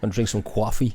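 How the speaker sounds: put-on New York accent. Joining in imitating New Yorkers: put-on New York accent. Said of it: "The proper New York accents".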